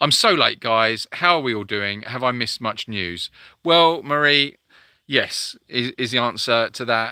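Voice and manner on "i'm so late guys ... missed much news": ordinary talk, nothing marked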